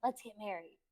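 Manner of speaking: soft, hushed half-whisper. Retelling what someone she was dating half-whispered during a movie: imitating a half-whisper. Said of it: "whispers in my ear".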